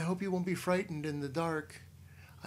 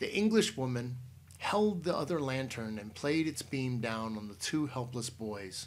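ordinary delivery

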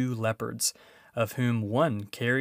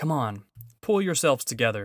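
said hastily, in a hurry. Peter, sword drawn, urges the others on before advancing, said hastily. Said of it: "hastily saying to the others".

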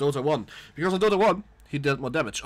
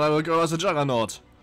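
ordinary talk

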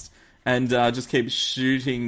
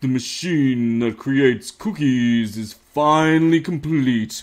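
put-on deep voice, louder; 4 dB louder than usual. Video maker reading a viewer's requested line, in a deep voice. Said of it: "say in a deep voice".

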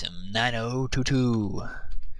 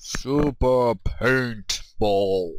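grand, epic movie-trailer announcer voice. Introducing a gaming video, in an epic movie trailer voice. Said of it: "that was my epic movie voice".

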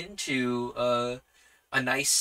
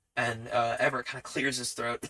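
ordinary talk, nothing marked

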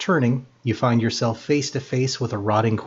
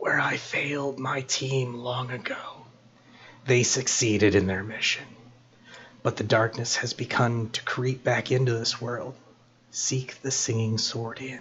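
hushed, soft half-whispered voice; 6 dB quieter than usual. Voicing a rotting armored figure speaking to the players: hushed half-whisper. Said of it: "speaks in little more than a hushed".

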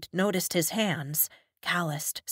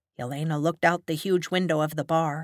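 ordinary delivery, nothing marked

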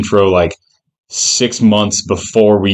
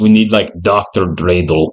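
put-on German accent. Joking about holiday figures and proposing a new one, German accent. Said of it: "I did a German accent".

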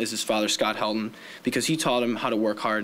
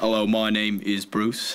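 put-on cartoon shark voice. Introducing a speaker and previewing his impressions, do a Bruce from Finding Nemo impression. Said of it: "impression of Bear Grylls and Bruce from Finding Nemo".

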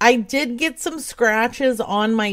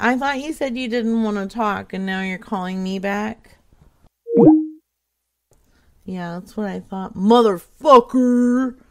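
cheeky, mouthy, sassy, snippy tone. Answering a caller who said she didn't want to talk: sassy. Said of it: "I had to get sassy".

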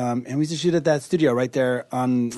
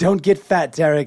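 put-on British accent, higher and louder; 4 semitones higher, 5 dB louder than usual. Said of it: "It's that British accent".

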